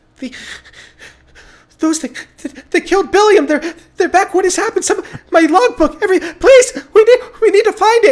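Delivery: very high, loud, stammering, panicked, frantic cries. A character in a group role-play starts to panic and call out: panicked calling out. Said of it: "she starts to like panic and call out".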